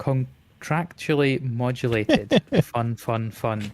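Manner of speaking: drawn right out, very slow and deliberate. Struggling to get a tricky phrase out: very slow. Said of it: "I had to say that so slowly to get it".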